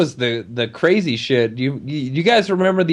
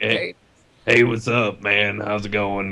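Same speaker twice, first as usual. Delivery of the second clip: put-on low growling voice; 5 semitones lower, 4 dB quieter than usual. Describing an uncle, imitating his greeting with uncle's low growl. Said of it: "that low like that growl voice".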